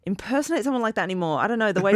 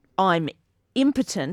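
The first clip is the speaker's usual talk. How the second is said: plain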